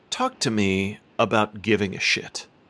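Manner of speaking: grave, earnest, serious talk-show interviewer voice. Asking a guest about the title, in a serious interviewer voice. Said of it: "say in a serious interviewer voice".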